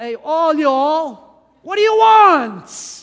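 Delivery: very loud, high, booming put-on American drawl. Voicing Jesus greeting followers the way it's done in America: put-on American accent. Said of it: "How do they do it in America?".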